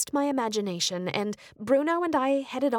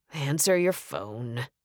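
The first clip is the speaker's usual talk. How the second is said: sighed, lower and slower; 9 semitones lower than usual. Narrator reads a man's line to the narrator as the narrator's cell rings, with a sigh. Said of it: "he finished with a sigh".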